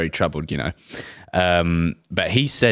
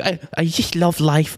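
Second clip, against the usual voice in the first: very high pitch, dragged out; 10 semitones higher than usual. Imitating Mike Tyson crying about life: terrible Mike Tyson impression. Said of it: "that's a terrible impression".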